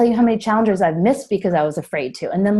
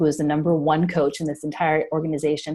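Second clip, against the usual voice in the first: ordinary talk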